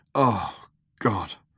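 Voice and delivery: muttered under his breath. A narrator reads Ford's response to the ship's computer, muttered. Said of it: "muttered Ford".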